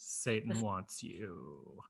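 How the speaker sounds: put-on creepy, sinister horror announcer voice. Saying the title of the film in development: put-on creepy voice. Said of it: "I have to say it like that".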